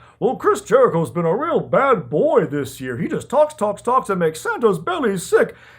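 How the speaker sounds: put-on dandyish English-accented voice. Retelling a bit with Chris Jericho as Santa and Big Show: Chris Jericho's foppish English Santa. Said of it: "weird, foppish English version of a Santa Claus voice".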